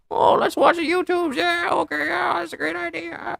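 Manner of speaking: very high, rasping, creaky voice. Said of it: "Why does my Lauren Michael always just sound like".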